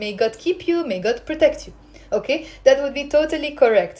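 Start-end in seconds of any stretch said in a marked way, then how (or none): none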